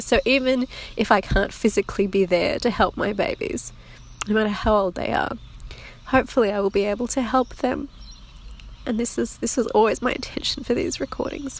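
teary, crying voice. Recording for her listeners on a teary day: tearful, crying. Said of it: "stop crying".

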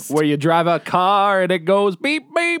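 car commercial announcer voice. Podcast host opening the episode, in a car commercial voice. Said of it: "That was a car commercial voice again".

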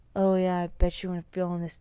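adult male, grown man's voice. Retelling a prank call, imitating a grown man's voice. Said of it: "like a grown man".

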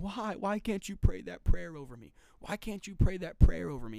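weeping, crying voice through tears. Retelling a woman's plea to a missionary, imitating someone crying. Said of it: "She's crying".

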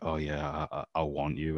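stumbling, halting, very broken non-native English. Retelling what a taxi companion said, imitating very broken english. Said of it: "in very broken English".

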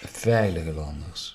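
slow, soft, with stress on VEILIGE.

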